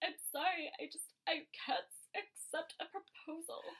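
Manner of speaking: acted slow, whispered, weepy voice through tears. Retelling what a crying girl in a promo says: imitating someone crying. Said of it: "and she's crying, and she's like".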